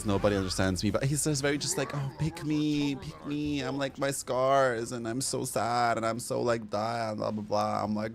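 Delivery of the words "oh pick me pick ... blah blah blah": drawn-out, tearful whine near crying. Mocking a self-pitying character who seeks validation: mock crying imitation. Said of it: "stop crying".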